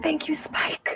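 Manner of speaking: hushed, soft, breathy whisper. Thanking a dinosaur named Spike while playing a character: whispering. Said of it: "I'm just gonna whisper".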